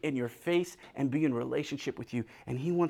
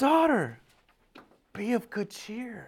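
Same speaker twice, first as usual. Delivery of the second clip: brimming with love and excitement, high and swooping; 7 semitones higher than usual. Retelling how he speaks to his daughter, acting it out with love and excitement. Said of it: "He says it with love, with excitement".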